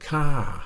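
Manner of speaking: ka lifted a little, then falling. Teaching the word women say at the end: falling tone on ka. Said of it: "it's got a falling tone. It goes up a little bit and then it comes down".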